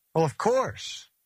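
impish, teasing, mischievous, playful, slightly high. Giving his standard reply to a question about reading literally: mischievous smiling tone. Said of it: "You can hear the mischievous smile in his voice".

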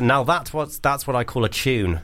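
usual speaking voice

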